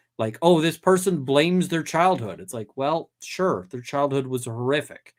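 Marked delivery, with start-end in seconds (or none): 0.4-2.4 dismissive, mocking, sarcastic tone. Giving an example of delivering something in a certain tone: sarcastic tone. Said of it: "delivering something in a sort of sarcastic tone".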